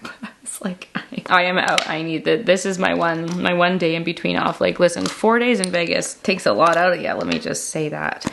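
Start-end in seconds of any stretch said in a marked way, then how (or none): none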